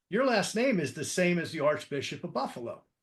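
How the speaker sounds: ordinary talk, nothing marked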